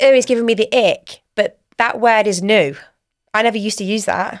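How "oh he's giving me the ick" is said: ordinary delivery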